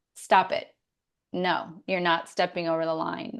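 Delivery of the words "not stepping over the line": normal talking voice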